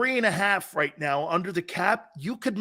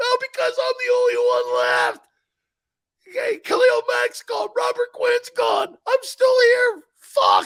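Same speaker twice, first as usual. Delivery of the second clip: very high-pitched fake crying and sobbing; 4 dB louder than usual. Playing a crying player asked why he cries: mock crying. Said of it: "you nailed it".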